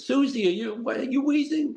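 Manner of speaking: very high-pitched grandmother voice. Retelling a grandmother speaking to the mom as a child: imitating grandmother's italian accent. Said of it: "my grandmother's accent".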